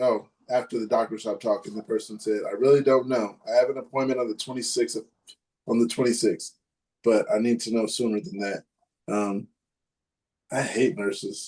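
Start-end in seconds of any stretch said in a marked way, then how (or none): none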